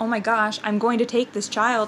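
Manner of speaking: usual speaking voice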